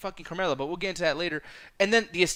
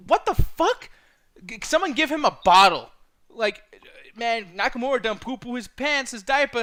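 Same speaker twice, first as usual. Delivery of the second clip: normal talking voice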